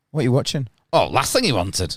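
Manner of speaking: northern English Yorkshire voice. Acting out a short exchange about a film title: Yorkshire accent. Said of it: "has to be done in a Yorkshire accent".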